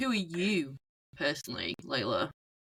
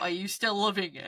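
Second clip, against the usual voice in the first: ordinary talk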